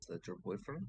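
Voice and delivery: quiet, low, hushed, under the breath. Player as Cormac, close to Esmeralda, pointing at Van Richten, speaking quietly. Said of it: "just kind of quietly".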